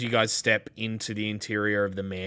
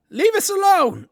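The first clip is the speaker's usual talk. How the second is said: woman's very high, very loud shout; 10 dB louder than usual. A woman behind the door yells at whoever knocked, in a yelling woman's voice. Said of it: "a woman's voice from uh, behind um, that that just yells out".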